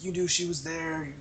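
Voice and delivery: shouting. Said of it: "Shane is still running around and yelling".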